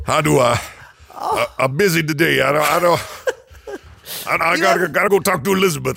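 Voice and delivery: put-on weird Cajun accent with stammered delivery. In a role-play, answering another speaker as John Rambo, weird Cajun accent. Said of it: "You have the weirdest Cajun accent".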